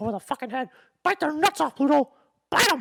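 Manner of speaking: loud, high, squeaky cartoon voice. Doing weird voices around kids, speaking in a squeaky Mickey Mouse voice. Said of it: "I could do anything really squeaky like that, like Mickey Mouse".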